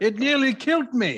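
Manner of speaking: put-on Scottish accent, loud and very high. Giving a joke's punchline after being asked to do the accent: scottish accent. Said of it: "can you do the accent?".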